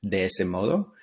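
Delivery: ordinary delivery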